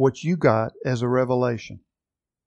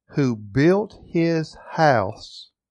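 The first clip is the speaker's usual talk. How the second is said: house stressed in a slow, drawn-out phrase. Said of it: "I'm emphasizing the word house again".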